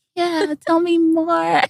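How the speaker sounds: very high, slow, comforting voice. Imitating how the other speaker invites secrets: imitating a safe-space listener. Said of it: "'cause you're like".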